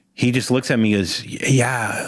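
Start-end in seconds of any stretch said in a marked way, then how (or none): 1.3-2.1 put-on Australian accent. Retelling meeting Heath Ledger, who answers the question, Heath Ledger's Australian accent. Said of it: "he's talking like he's in an Australian accent".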